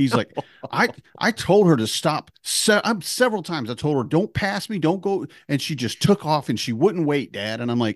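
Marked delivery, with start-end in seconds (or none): 0.7-7.6 high, pissed-off, indignant, angry complaining, acted out. A father retells his son's complaint to him, acting out someone pissed. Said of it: "he's pissed".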